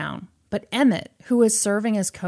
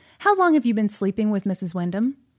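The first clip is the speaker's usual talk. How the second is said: plain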